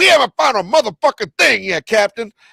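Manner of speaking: shrill, very loud, high movie-star yell. Listing impressions to try, the line done as a Samuel Jackson impression. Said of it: "like, a Samuel Jackson".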